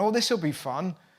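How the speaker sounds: ordinary talk, nothing marked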